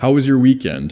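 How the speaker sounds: pitch curving downward on the word weekend. Showing how people with higher status ask it, pitch falls on weekend. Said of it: "Curves down".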